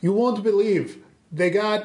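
put-on disguised voice, Russian accent. Disguising the voice in character to lure a Nazi with beer: Russian accent. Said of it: "that's Russian".

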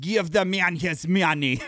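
exaggerated, slow, cartoonish movie-style Russian accent. Quoting an actor's line from a movie, in a cartoonish Russian accent. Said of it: "he would totally sound like that".

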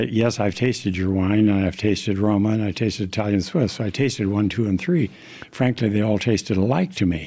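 normal talking voice

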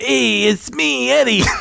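clumsy put-on voice, high and creaky, poorly done. Retelling someone walking into an office: bad Eddie impersonation. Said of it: "I'm real bad at that impersonation".

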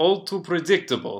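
put-on slight Russian accent. Playing a character making a chess move: light Russian accent. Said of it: "speaking in a light Russian accent".

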